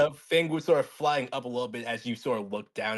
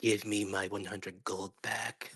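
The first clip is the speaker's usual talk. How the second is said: put-on whisper, lower and quieter; 4 semitones lower, 7 dB quieter than usual. Playing a character who flies up to another player: whispering in character. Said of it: "whisper to you".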